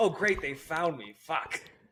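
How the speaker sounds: acted upset grumbling. Imitating Ben Affleck when camera people find him: imitating upset Ben Affleck. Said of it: "of course he's, like, upset".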